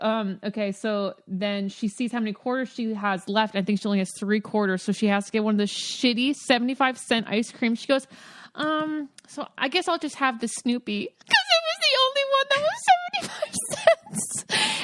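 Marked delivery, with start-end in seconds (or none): 11.2-14.9 very high, rising, swooping squealing gush. Telling a friend a cute story about a girl, high-pitched squealing. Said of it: "I was so high-pitched squealing that I lost audio".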